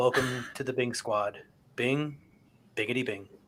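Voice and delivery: dead-flat, extremely monotone, low drone. Saying the show's welcome line opposite to the usual way: extremely monotone delivery. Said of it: "I'm just going to say it in an extremely monotone voice".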